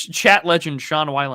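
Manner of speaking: ordinary delivery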